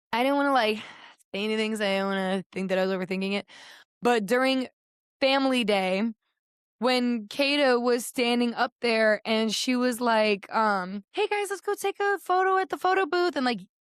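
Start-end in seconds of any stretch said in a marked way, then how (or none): 11.1-13.3 high, put-on yell, projected far. Retelling how Kata called everyone across the courtyard: imitating Kata yelling. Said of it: "she yelled it across the courtyard".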